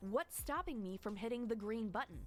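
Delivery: plain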